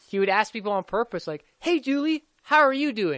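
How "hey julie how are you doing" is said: mock, high, all chipper and cheery. Imitating a man who greets people on purpose, in a mock-chipper tone. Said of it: "all chipper".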